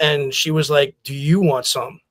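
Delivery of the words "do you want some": stern, menacing, confrontational mother's voice. Retelling the mother staring down the coach: imitating mother's menacing threat. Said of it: "Just looked at him dead in the eye and said".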